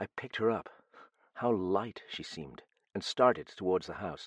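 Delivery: plain reading voice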